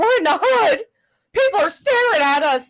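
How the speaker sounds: play-acted very high, shrill, theatrical, over-dramatic panic. Retelling a woman lost while driving around on her stream, imitating her being dramatic. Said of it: "She's so dramatic".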